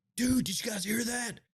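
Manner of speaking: mock shriek, very high-pitched screaming call. Retelling a sound heard from the woods: imitating Tony screaming. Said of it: "Tony started screaming, like".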